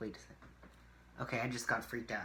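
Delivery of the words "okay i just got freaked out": ordinary delivery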